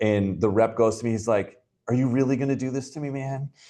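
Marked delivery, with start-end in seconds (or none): 1.9-3.5 high-pitched, playful, good-natured joking tone. Retelling a rep's reply when called on about a lost deal: imitating a joking protest. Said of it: "in, like, a joking way".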